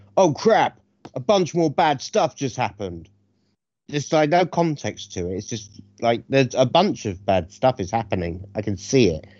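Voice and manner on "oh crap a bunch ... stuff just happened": high, sudden barked line. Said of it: "suddenly barks".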